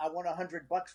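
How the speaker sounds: usual speaking voice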